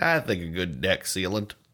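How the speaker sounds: put-on Southern accent. Answering as someone's dad about varnishing a corpse: Southern voice. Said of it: ""Someone from the South."".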